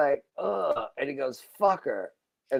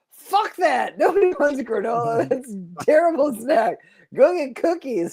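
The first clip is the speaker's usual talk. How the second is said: mock pissed-off, dismissive, pitched-up, annoyed rant; 9 semitones higher than usual. Retelling what he said when she brought granola as snacks, acting out an angry outburst. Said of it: "he's pissed off".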